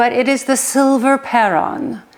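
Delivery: attempted proper Swedish accent. Presenting candlesticks, trying to say the product name in a Swedish accent. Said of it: "I will try to say this with a Swedish accent".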